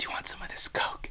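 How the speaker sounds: tempting, hushed, quick, very quiet whisper. Acting out how he tries to make you want his Diet Coke, imitating someone whispering. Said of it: "he'll like whisper like".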